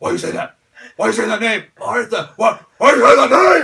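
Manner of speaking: very loud, high, demanding shout. Retelling the fight's ending, imitating Batman demanding an answer. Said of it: "and Batman like".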